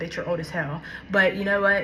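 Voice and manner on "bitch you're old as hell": ordinary talk, nothing marked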